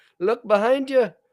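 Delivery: high, loud, put-on Irish accent. Quoting what the guide said underwater, put-on accent that sounds Irish. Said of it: "That was me doing a Mexican accent".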